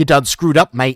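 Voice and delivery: terrible, bad put-on Australian accent. Voicing an imagined visitor from Australia, in a terrible Australian accent. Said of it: "that that is my terrible Australian accent".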